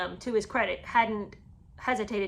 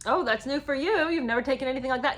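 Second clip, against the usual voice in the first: put-on gentle, light teasing with a laugh; 4 semitones higher than usual. Act out how she would have said it to William, imitating her saying it with a laugh. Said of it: "she would have said it with a with a laugh".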